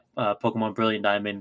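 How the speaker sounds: plain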